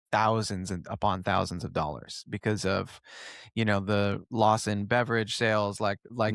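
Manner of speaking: ordinary talk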